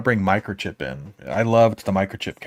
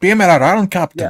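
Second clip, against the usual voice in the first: very high, loud, drawn-out Scottish accent; 11 semitones higher, 8 dB louder than usual. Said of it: "my imitation of a Scottish accent".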